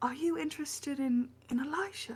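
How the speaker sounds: theatrical whisper. She leans over to Niberius to ask him a question: stage whisper. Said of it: "leans over and stage whispers".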